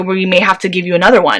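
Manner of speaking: ordinary talk, nothing marked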